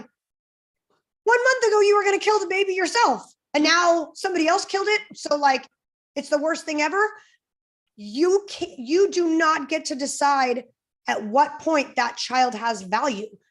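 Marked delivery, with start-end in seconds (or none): 0.0-5.0 acted-out high-pitched yelling. Retelling what they yelled at the TV during a show, retelling yelling at the TV. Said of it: "I'm yelling at the T V going".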